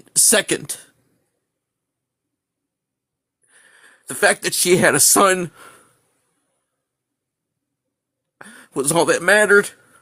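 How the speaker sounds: speaking through tears. Speaker telling a story, crying. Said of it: "I'm sorry that I'm crying".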